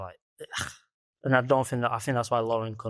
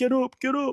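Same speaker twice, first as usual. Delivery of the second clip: put-on very high, weepy, crying pleading tone; 13 semitones higher than usual. Retelling a show's scene where Ed Gein's brother is struck, imitating Ed Gein crying. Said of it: "Ed Gein's like crying, going".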